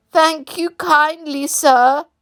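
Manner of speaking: feeble voice. Narrator reading the toad thanking a gentleman, in a feeble voice. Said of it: "said the toad in a feeble voice".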